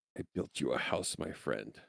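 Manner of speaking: soft, hushed whisper, very close in. In a game scene, Sebastian speaks into Leichenheim's ear, whispering. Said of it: "goes over to Leichenheim's ear and whispers".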